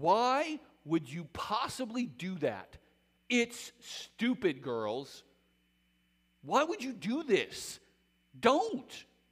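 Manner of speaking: acted harsh bitter sarcasm. Performing her words urging care for two women: acting out sarcastic bitterness. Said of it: "A little bit sarcastic, a little bit bitter".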